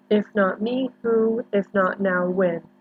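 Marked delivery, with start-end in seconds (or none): none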